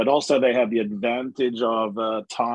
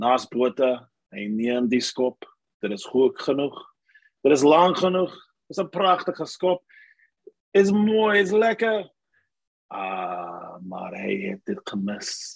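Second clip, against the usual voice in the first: put-on commentator voice, Afrikaans accent. Retelling an old Afrikaans radio commentator calling a kick: imitating old Afrikaans radio commentator. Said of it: "he would say something like this".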